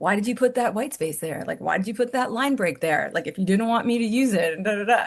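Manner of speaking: ordinary delivery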